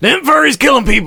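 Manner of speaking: very high-pitched comic character voice. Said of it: "say it like Red Fox".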